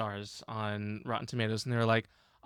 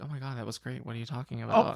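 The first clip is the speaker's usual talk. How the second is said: ordinary talk, nothing marked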